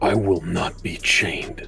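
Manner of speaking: low growling. Narrating a game, a character answers the voice in his head and a woman: growled out. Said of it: "he will kind of growl out".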